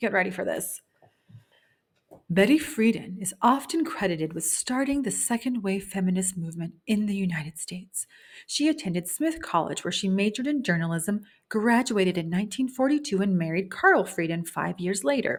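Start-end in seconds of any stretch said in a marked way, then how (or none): 2.3-15.4 public-radio announcer voice. Speaker reading a book's introduction aloud to listeners, in NPR voice. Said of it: "in my N P R voice".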